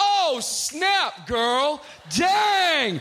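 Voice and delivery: very slow, loud, drawn-out, wildly thrilled exclamation. Reacting to her jeans the way she wants: wild, excited enthusiasm. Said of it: "she wants me to lose my ever-loving mind".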